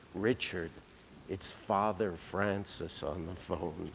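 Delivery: very soft, quiet, discreet hushed voice. Retelling how the secretary announced a priest's call: imitating Marilyn's hushed voice. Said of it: "would come in in a very hushed way and say".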